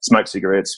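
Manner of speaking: plain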